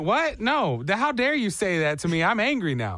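plain

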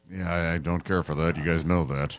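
upset, tense speech pushed through gritted teeth. Complaining that a game is only on a streaming service: Harrison Ford impression. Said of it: "is this your Harrison Ford?".

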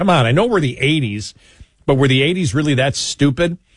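ordinary talk

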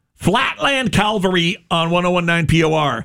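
aggressive, angry tone. A radio host announces the band and the station; said very aggressively. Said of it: "I said that very aggressively".

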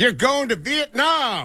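very high, swooping, thrilled put-on host voice. Imagining a game show prize announcement: excited Ryan Seacrest impression. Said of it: "Ryan Seacrest says very excitedly".

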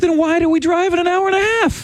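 shrill, high-pitched, whining tone. Comparing two fireworks shows, then high-pitched whining. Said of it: "Do you see how my voice goes high".

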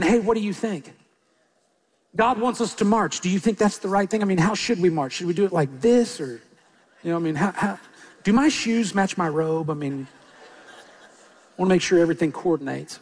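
low, sarcastic, mock dithering.

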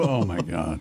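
low, mumbled muttering under the breath. Acting out a man whose call gets answered, muttering under his breath. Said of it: "Under his breath".

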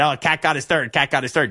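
ordinary talk

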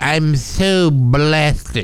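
droopy, drooping cartoon-like voice. Asked to do the droopy impression, a man answers in a Droopy dog impression. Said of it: "He sounds just like that droopy dog".

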